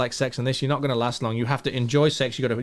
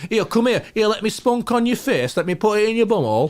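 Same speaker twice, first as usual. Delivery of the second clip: put-on West Yorkshire accent, pitched up; 8 semitones higher, 3 dB louder than usual. Showing how people talk where the speaker grew up: imitating Yorkshire speech. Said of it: "we talk like this".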